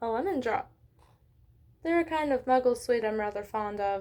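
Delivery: ordinary delivery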